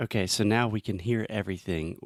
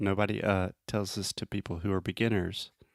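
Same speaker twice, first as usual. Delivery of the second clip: normal talking voice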